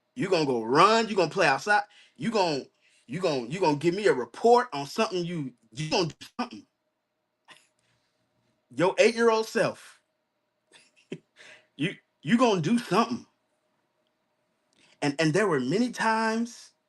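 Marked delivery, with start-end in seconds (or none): 0.2-13.3 put-on lecturing voice. Retell what your uncle told you about playing the game all day, in Bishop's voice. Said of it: "just hear it in his voice".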